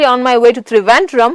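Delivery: plain reading voice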